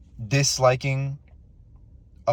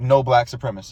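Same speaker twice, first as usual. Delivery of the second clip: ordinary delivery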